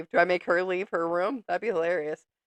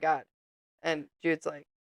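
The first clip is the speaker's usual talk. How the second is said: usual speaking voice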